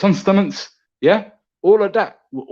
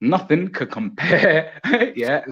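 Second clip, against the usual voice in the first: slow speech, laughing through the words. Answering another speaker's claim about a challenger, laughing while talking. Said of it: "Sorry, I'm laughing".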